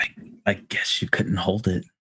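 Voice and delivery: soft, under-the-breath whisper. Zipping a captive into a bag and speaking at its head: whispering in character. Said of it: "I'm just gonna whisper".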